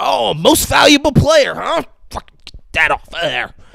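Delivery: mock aggressive, high, rough, furious ranting. Retelling a scene where a father throws trophies at his son; mock-aggressive anger. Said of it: "And he's like aggressive".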